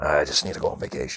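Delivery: put-on muttering, as if to oneself. Retelling own past words when the kids asked to play: imitating own muttering. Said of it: "but I would mutter".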